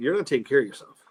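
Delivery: play-acted, dead-straight delivery with no softening. Retelling a doctor's words at a check-up: imitating a deadpan doctor. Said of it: "Straight, straight as can be".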